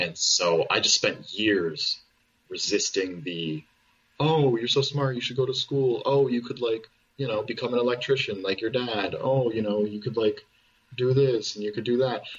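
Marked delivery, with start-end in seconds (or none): 4.2-12.2 fast, patronising, condescending, talking-down voice. Recalling years of being told to go to school, in a mock-condescending voice. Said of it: "the voice that you give them".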